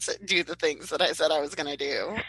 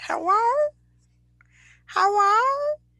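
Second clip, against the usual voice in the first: very high voice of a cat talking; 4 dB louder than usual. Trying out silly voices, now a cat trying to talk. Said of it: "Maybe a cat trying to talk".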